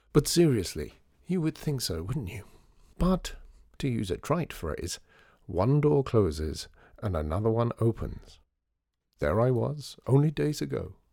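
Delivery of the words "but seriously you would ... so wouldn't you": ordinary delivery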